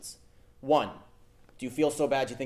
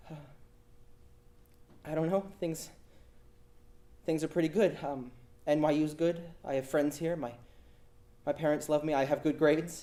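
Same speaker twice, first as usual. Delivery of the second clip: put-on young, timid, scared voice, halting and stumbling over words; 2 semitones higher, 4 dB quieter than usual. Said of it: "This young, scared voice comes on the phone".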